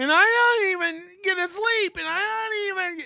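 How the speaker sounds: very high, put-on weepy crying voice. Mocking another speaker's fake emotional voice: imitating a fake emotional voice. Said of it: "whenever Johnny tries to do a fake emotional voice".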